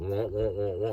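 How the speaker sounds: muffled cartoon-teacher wah-wah sound. Describing mindless small talk, the speaker mocks it: Miss Othmar wah-wah voice. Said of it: "like Myth Othmar from Peanuts".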